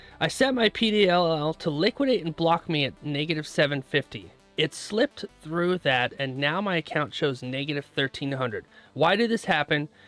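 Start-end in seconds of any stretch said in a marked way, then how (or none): none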